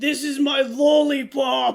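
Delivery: very loud, slow, belted smoker voice. Imitating a line from a very bad English dub: Sanji smoker voice. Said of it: "They gave him a smoker voice".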